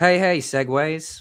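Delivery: clumsy, bad put-on Appalachian accent. Trying out an accent you find hard to place, doing a bad Seg impression. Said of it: "Something like that. Nah, that wasn't very good".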